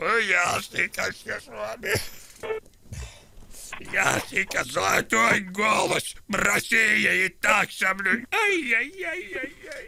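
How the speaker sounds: whimpering, mock-tearful, playfully hurt complaining tone. A young man complains at being slighted and is told not to cry, whimpering, playfully hurt. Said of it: "Не плачьте, молодой человек".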